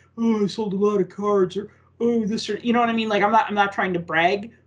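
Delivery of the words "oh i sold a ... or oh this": put-on caveman-style talking voice. Mocking the kind of bragging she wants to avoid, in a caveman voice. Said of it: "that's like your caveman voice".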